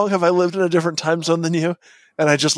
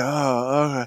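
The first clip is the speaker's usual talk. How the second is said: put-on mumbled numb, gauze-filled mouth speech, lower; 4 semitones lower, 4 dB quieter than usual. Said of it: "mouth still swollen, still full of gauze".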